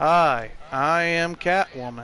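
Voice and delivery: flat robotic monotone delivery. Mocking how Storm introduces herself as Catwoman: robotic Storm impression. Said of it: "never do anything other than speak like a robot".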